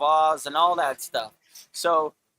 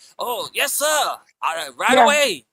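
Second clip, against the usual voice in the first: mock obedient, servile voice, higher pitch; 4 semitones higher, 4 dB louder than usual. Mocking leaders as gophers: imitating a servile gopher. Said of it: "doing the master's bidding".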